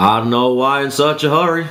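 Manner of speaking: slow, drawn-out, unhurried rural drawl. Imitating country boys talking about city people: imitating slow country speech. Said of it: "with that slow of a".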